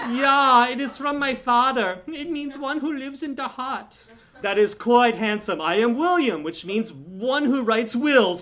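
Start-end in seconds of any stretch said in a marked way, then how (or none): 0.1-4.0 charming, put-on German accent. A narrator reads Greta answering the narrator's compliment, in a charming German accent. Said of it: "She asked in a charming German accent. ... I has come from this German kinder orphanage for forgettable children to beg for your assistance".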